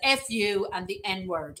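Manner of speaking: usual speaking voice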